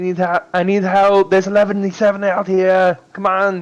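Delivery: loud yelling in a put-on ogre voice. Calling out for help in the game, mimicking Nob: yelling in Nob's voice.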